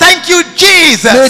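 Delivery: very loud shout. Leading the crowd in thanks to the Lord, shouting. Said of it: "I'm shouting".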